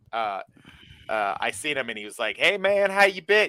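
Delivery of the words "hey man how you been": put-on very high-pitched voice with southern accent. Retelling how a man at the joint in Pensacola greeted the speaker, in a southern accent. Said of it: "He has a southern accent".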